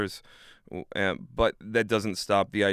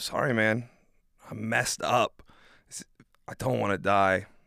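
put-on crying voice. Retelling words to his dad in the emergency room, imitating own past crying. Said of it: "crying, being like".

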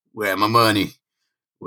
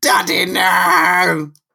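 put-on screaming voice, pitched higher; 7 semitones higher than usual. Recapping a story where Harry's father falls, retelling Harry's scream. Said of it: "Harry's just screaming like".

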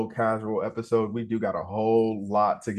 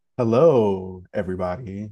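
smooth late-night radio DJ voice; 2 semitones lower than usual. Greeting everybody at the start, in a quiet storm radio voice. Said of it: "doing this all quiet storm voice".

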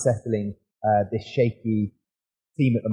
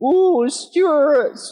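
mock Scottish accent, much higher, louder; 7 dB louder than usual. Retelling how others on an advert shoot teased a Scottish teammate: fake Scottish accent. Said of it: "they're all doing their Scottish impression".

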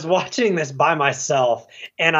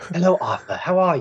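put-on British accent. Complaining about an accent in James Wan's movie, doing Amber Heard's fake British accent. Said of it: "You are not British".

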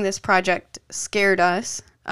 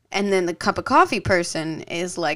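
normal talking voice

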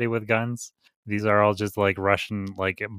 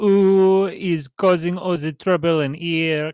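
put-on French accent with drawn-out ooh; 8 semitones higher, 6 dB louder than usual. Retelling what a woman said coming in the door, imitated French accent. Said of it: "she has a French accent".

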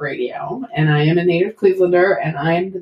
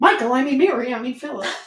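play-acted cross, mad voice, pitched up; 6 semitones higher than usual. Explaining a mother's habit of mixing up names when mad; imitating an angry mother. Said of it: "my mother used to do it when she was mad".

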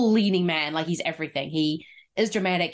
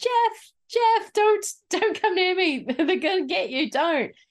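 yell pitched way up high; 14 semitones higher than usual. Retelling a film scene where a character warns someone off: imitating someone yelling. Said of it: "she just starts yelling".

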